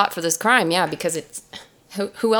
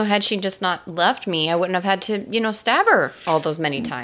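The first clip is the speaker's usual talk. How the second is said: usual speaking voice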